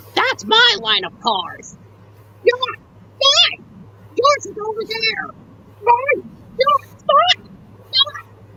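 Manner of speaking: very high-pitched squabbling toy train voice. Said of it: "When he and Ben are arguing like this".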